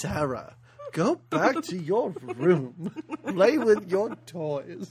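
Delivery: goblin king character voice. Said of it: "[name]'s interpretation of what a goblin king would sound like".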